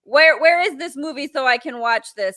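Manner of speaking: plain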